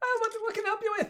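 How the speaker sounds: very high, perked-up halfling shopkeeper voice. Narrator voices a halfling who perks up as the door dings: perky halfling shopkeeper voice. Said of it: "a halfling kind of like perk up".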